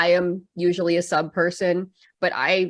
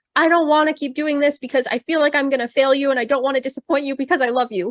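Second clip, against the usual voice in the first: put-on high-pitched shrieking cry flung downward; 8 semitones higher than usual. Retelling a flashback scene, calling down from a tree to Gramps: imitating Zenitsu screaming. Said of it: "screaming down to Gramps".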